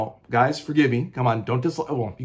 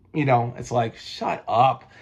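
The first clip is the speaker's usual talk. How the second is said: ordinary talk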